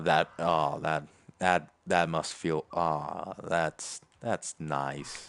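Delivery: grudging, envious tone, low and halting. Reacting to another player getting lucky with a weapon update, envious. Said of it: "You you can hear the envy in my voice".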